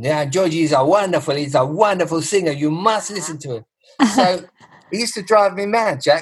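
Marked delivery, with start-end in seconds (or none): 0.0-3.6 put-on broad Greek accent. Retelling what a restaurateur used to tell the speaker, in a broad Greek accent. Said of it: "And very broad Greek accent".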